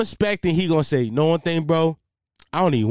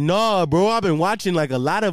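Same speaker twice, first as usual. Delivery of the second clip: dopey, dumb-sounding, put-on Canadian accent; 2 semitones higher than usual. Quoting a kid's reply in a retold story, fake canadian accent. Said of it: "I give him this Canadian accent, but it's not Canadian. It's more idiot".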